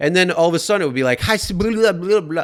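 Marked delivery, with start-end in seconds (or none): 1.2-2.4 high, jumbled gibberish breaking off mid-word. Imitating a news reporter having a stroke during a report: weird gibberish speech. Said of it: "this weird gibberish".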